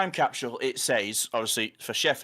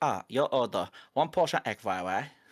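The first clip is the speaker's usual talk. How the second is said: put-on Chinese accent. Retelling a flatmate's imitation of the takeaway order-taker: imitating Chinese takeaway staff accent. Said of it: "he would say it perfectly".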